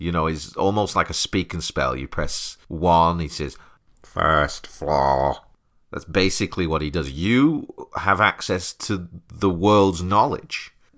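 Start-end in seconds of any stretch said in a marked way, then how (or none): 4.0-5.4 flat, dead level, machine-like delivery. Speaker to an AI, mimicking how Eugene announces floors: flat tone like Eugene. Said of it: "he just announces floors in a very flat tone".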